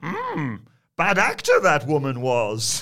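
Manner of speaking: loud, booming alien sage voice with big pitch swoops. Reading a message aloud and commenting on an actor: Yoda voice. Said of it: "I read this in a Yoda voice".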